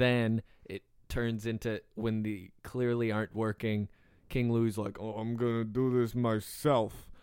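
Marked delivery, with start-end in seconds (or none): 5.0-6.9 put-on Russian accent. Pitching a game boss fight, quoting King Louie: King Louie Russian accent.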